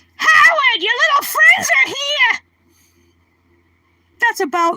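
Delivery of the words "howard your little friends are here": very high-pitched hollering. Listing the impressions they can do, the speaker performs a Mrs. Wolowitz impression. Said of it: "I do Mrs. Wolowitz".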